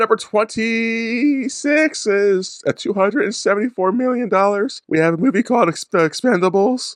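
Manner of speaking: very high-pitched, cracking wrestler voice. Reading out a numbered movie list, in a cracked voice. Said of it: "Why are you talking like Mick Foley".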